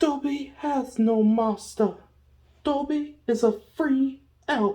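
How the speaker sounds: very high, little elf voice. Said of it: "read it in the character Dalby's voice".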